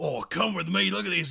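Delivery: creaky, rough bush wildlife presenter voice. Imagining a crocodile hunter running into huts: crocodile hunter impression. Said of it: "a racist crocodile hunter. He's like".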